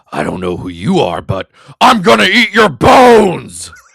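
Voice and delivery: very loud, slow, drawn-out werewolf voice. Voicing a line from the guy being stalked, in a werewolf voice. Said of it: "assume this is being said in a werewolf voice".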